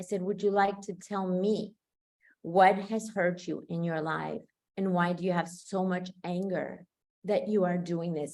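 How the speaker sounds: tender, affectionate tone. Retelling how they spoke to a man who was hitting a child, in a loving voice. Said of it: "with the most loving voice".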